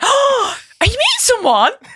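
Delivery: play-acted, super-excited, very high and swooping. Retelling asking a friend if she was meeting someone: imitating own excited question. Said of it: "Super excited".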